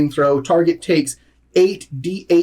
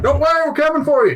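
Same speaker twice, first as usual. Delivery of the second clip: very high, carrying shout; 11 semitones higher than usual. Calling in character to someone heard inside the mound: yelling out. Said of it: "I'm gonna yell out".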